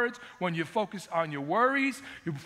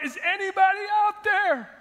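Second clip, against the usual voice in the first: mock, very high, loud cry out; 12 semitones higher, 6 dB louder than usual. Retelling a joke about an old man falling off a cliff: imitating a man crying out. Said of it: "he cries out".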